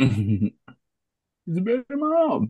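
put-on dumb, derpy mocking voice. Predicting Adam's argument, the speaker mocks him in a derp voice. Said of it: "you gave him a derp voice".

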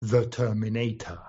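British English accent. Saying a word when the others ask for it: British English accent. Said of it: "Británico, por favor".

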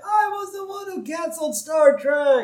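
put-on very high, shouted old man's cry. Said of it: "we hear Grandpa say".

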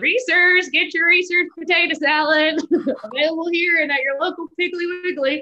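acted, very high, loud shout through a megaphone. Recalling his summer job as a young actor at a barbecue festival, retelling yelling through a megaphone. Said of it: "sad actor with a megaphone just yelling".

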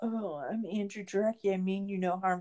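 mocking, annoying, grating voice. Mocking a filmmaker who is called very annoying: mocking annoying Andrew Jarecki impression. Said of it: "He's just very annoying".

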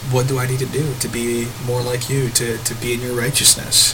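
usual speaking voice

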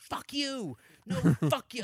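very high-pitched, drawn-out shouting-match screaming. Retelling a hallway fight with a colleague: imitating someone yelling. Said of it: "I'm in the hallway yelling".

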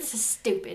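put-on British accent. Imitating a sister reacting to the podcast: British accent. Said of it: "I don't know why you gave her a British accent".

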